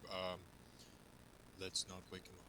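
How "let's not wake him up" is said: very quiet, low, barely audible half-whisper. A player's character speaks to the group, half-whispering. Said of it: "I whisper to to the group".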